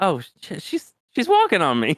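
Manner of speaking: high, startled, blurted exclamation of surprise.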